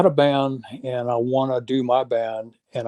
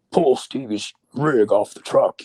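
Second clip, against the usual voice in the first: put-on English accent. Retelling a backstage story, quoting a man's order in an English accent. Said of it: "he did this English accent of".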